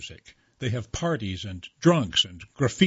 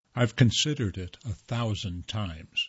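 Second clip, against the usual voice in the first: plain reading voice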